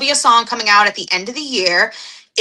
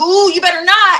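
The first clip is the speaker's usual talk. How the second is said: mock hard tough voice, very high pitch; 9 semitones higher, 4 dB louder than usual. Pretending to pick up a chair in a fight, put-on tough threat. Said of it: "see how tough that sounded?".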